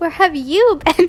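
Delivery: high-pitched, giggling, barely holding it together. Reading a story aloud, laughing while talking. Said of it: "I can't stop laughing".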